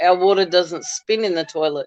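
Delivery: ordinary delivery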